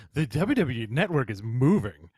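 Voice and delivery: very fancy, lofty, self-important pompous voice. Asked by the other speaker to read an email aloud, in a very fancy voice. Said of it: "can you read it in like a very fancy voice?".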